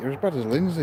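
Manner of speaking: ordinary talk, nothing marked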